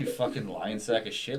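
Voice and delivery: ordinary talk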